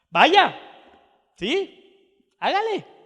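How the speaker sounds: very high, loud, swooping, mocking sarcasm. Preacher acting out the prophet's reply to the king, acting out a sarcastic reply. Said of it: "Con sarcasmo".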